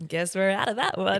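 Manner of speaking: cool, unbothered, casual, offhand dismissiveness. Retelling what the shop worker said: imitating someone speaking coolly. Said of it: "she said it so coolly".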